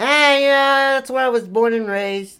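put-on New Jersey accent. Character asked where he's from answers, in a New Jersey accent. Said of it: "That sounds like a New Jersey accent".

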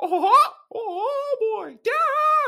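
squeaked out high and loud. Voicing the daughter Amanda while playing a game: Mickey Mouse voice. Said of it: "Amanda sounded like a Mickey Mouse".

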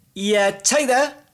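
very high, loud, put-on unsure tone. A climber impersonating climbers who pretend the rock is at fault: faking hesitant uncertainty. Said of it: "that's the sound of someone pretending like there's something a little bit wrong with the rock".

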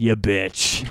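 mock mutter under breath. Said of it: "I said it kind of under my breath".

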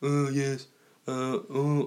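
very slow put-on voice dragging every word out. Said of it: "I'm doing a Beatles impression".

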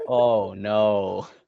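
sarcastic, mock-sympathetic tone. Reacting to a joke from another speaker: sarcastic. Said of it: "like you felt so bad, like, sarcastic".

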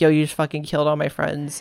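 plain

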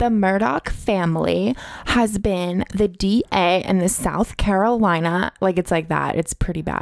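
put-on valley girl voice with vocal fry. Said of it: "Let's hear what her voice sounds like".

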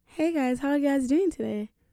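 friendly put-on American accent. Doing an accent on request, greeting the guys, in an american accent. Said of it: "can you do an American accent?".

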